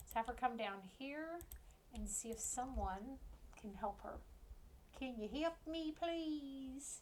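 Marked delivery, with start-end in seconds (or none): 5.0-7.0 put-on slow, goofy Southern accent, played silly. Voicing her as she asks someone for help; silly Southern accent. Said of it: "that's not a fake Southern accent. It's just me being silly".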